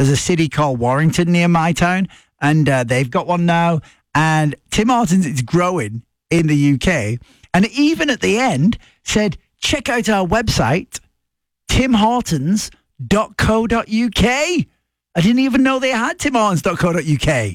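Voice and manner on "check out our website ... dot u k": put-on English radio-announcer accent, high and deliberate. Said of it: "This was in an English accent".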